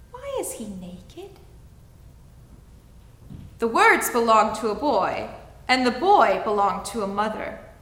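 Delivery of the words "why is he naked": put-on very quiet, soft, high, polite little child's voice. Narrator reads a small boy's question amid cheers, small polite child's voice. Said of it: "a small voice inquired politely".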